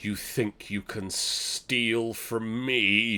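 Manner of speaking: slow, looming woman's voice with echo. Voicing a voice that echoes through the citadel: female booming voice. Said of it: "a female booming voice echoes through the citadel".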